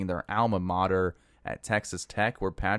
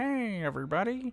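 bad, goofy frog puppet voice, very high; 13 semitones higher, 4 dB quieter than usual. Giving your best shot at an impression for the others, in a goofy Kermit the Frog voice. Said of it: "Kermit the Frog voice?".

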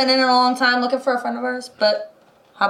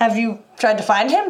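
ordinary talk, nothing marked

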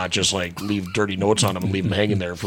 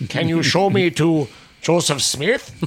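very high, otherworldly alien voice; 9 semitones higher, 4 dB louder than usual.

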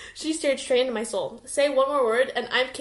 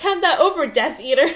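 loud, commanding yell; 3 semitones higher, 7 dB louder than usual. Narrator reads the first-person character confronting a man at the table, yelling. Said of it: "I yelled".

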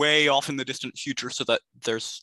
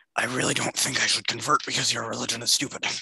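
rehearsed put-on monster dragon character voice. Speaker answers the players' demand that the dragon convert, in a dragon voice. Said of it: "I actually worked on a dragon voice in the meantime for this".

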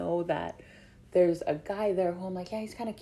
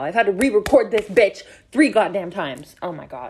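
annoyed, fed-up, exasperated, raised angry voice; 10 dB louder than usual. Explaining having to re-record three times: annoyed and mad. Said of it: "I'm annoyed and mad right now".

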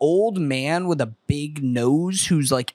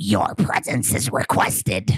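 creature voice pushed up too high in pitch; 5 semitones lower than usual. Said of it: "you did it a little too high there".

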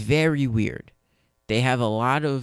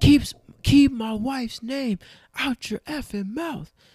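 furious, very high-pitched angry outburst; 13 semitones higher than usual. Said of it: "angry now".

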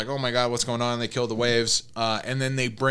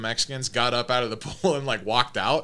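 plain

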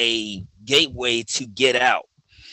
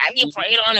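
weird, strange voice pitched way up; 10 semitones higher than usual. Quoting the aunt at the end of their phone calls, imitating Aunt Betty's weird voice. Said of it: "She has like this really weird voice".

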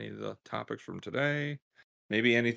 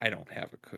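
mock smirking tone, much quieter; 5 dB quieter than usual. Father acting out his child's reply to him, imitating a smirking reply. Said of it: "And she'll smirk".

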